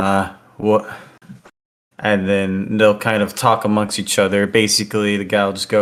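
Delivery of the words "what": gruff man's voice. Voicing a man who opens the door: gruff man's voice. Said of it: "you'll hear a gruff man go".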